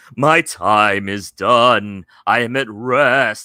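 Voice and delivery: very loud, slow, booming, eerie drawn-out ghost moan. A narrator reads the spirit's reply during a Ouija board session, spooky ghost voice. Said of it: "Spooky Ghost voices are fun".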